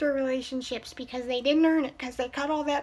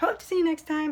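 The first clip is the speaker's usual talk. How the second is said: voice breaking and cracking mid-phrase; 2 semitones higher than usual. Signing off a video to viewers, voice cracking. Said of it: "My voice just cracked".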